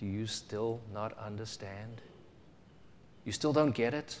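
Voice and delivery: voice brought right down, very soft and hushed. Telling the story, imagining Jesus questioning the disciples again, in a lowered voice. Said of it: "lowering his voice and saying".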